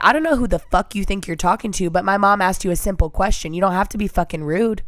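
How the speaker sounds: ordinary delivery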